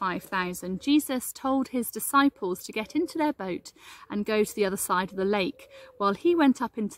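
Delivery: plain reading voice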